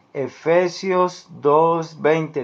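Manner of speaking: very slow, spelled-out dictation. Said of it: "te lo voy a leer despacio".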